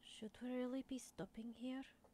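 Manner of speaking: discreet, private, confidential manner. Voicing Storm tugging Kovek's robes, asking quietly: quietly speaking. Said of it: "very quietly go".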